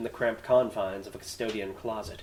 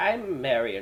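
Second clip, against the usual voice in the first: exaggerated, overly old voice. Trying out a character's voice, too-old Marion Wheeler voice. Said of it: "No, she's not that old".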